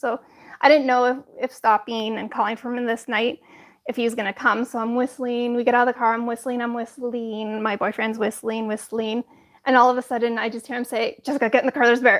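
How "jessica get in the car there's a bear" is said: put-on very fast speech, much faster. Retelling her boyfriend's sudden words at the car, retelling rapid words. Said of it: "he literally said it that fast".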